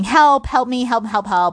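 put-on high-pitched, repeated screaming cries. Retelling screaming for help after slamming the door: imitating own past screaming. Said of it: "And started screaming".

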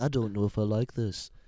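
put-on British puppet voice. Imitating a hesitant puppet from a show: imitating the big red puppet. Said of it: "one of them sounded like the Beatles".

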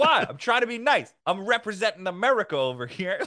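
loud, riled, angry voice. Retelling what a grandpa said in a bar: imitating angry Long Island guy. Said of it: "angry Long Island, like, personality".

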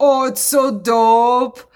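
mock stoned-sounding speech. Retelling what a stoned guy at a pizza place asked: imitating a stoned guy. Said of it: "he looked stoned as fuck".

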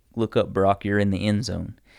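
ordinary delivery

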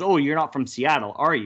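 ordinary talk

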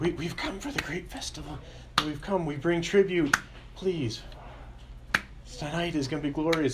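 rapt, fervent devotion, eager and pitched high. Retelling how robed visitors arrived to beg for a favor, he mimics their words in put-on fervent eagerness.

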